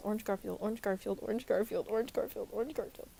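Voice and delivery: very fast, rapid-fire repeated delivery. Near the end of a video, repeating a phrase five times, very fast. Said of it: "I'll say that five times fast".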